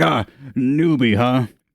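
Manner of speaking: amused mocking laughter. Voicing a smith who finds the request hilarious: laughing at a newbie. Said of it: "as if it's the funniest thing he's ever heard".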